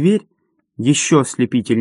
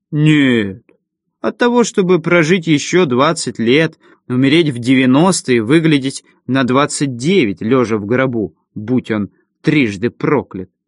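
plain

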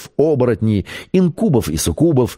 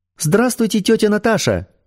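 put-on thin child's voice, higher; 11 semitones higher than usual. Svetlana takes the phone from a girl and greets aunt Natasha, in a thin childlike voice. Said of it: "тонким детским голосом сказала Светлана".

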